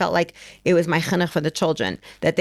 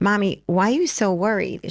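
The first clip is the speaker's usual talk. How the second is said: put-on gentle, sweet, innocent little-girl voice; 3 semitones higher than usual. Mother retelling what her eight-year-old daughter asked her, imitating a child speaking sweetly. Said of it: "very sweetly".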